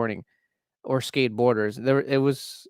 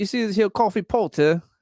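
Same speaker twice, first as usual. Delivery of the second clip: put-on British accent with raised pitch; 7 semitones higher than usual. Showing off his British accent: Ricky Gervais-style British accent. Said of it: "You want to hear my British accent?".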